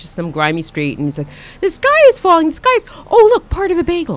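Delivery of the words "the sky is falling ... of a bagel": very high, loud cartoon pigeon voice. Acting out what he says on a grimy street, in a pigeon voice. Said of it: "it's good to hear your pigeon voice".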